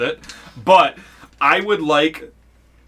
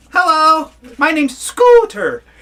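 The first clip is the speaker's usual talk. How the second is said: very high, slow, drawn-out little owl voice; 13 semitones higher, 5 dB louder than usual. Voicing a small owl who greets the players: Scooter character voice. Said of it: "he's just like".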